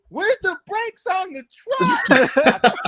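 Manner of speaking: high, piercing, shrill scream at full volume. Retelling a truck ride when Buddy suddenly starts screaming, retelling Buddy's scream. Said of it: "I hear Buddy start screaming".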